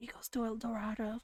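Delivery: hushed whisper. Looking around to make sure no one is near, naming the runner's destination: whispering. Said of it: "She whispers it".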